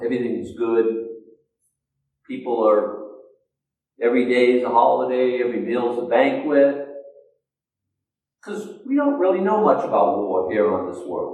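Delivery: mocking, ironic, heavily sarcastic delivery. Preaching about war and peace after quoting scripture: sarcastic. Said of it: "Factor in the sarcasm".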